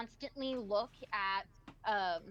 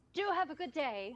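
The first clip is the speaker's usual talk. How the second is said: cheery shopkeeper blacksmith voice, higher pitch; 4 semitones higher than usual. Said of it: "ever so cheerfully".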